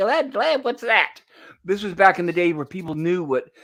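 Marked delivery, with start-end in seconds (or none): 0.0-1.2 put-on high, childlike little voice. Imagining what a kid today would ask: imitating a kid. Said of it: "a kid would be like".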